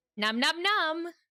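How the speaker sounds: high, robotic text-to-speech voice. Speaker pretends to eat rock candy, TikTok robot voice. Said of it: "I sounded like the TikTok robot voices".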